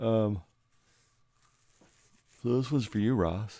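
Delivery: words stretched by a yawn. Late in the evening, speaker turns to a viewer's emailed question, yawning. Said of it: "Sorry, I'm yawning".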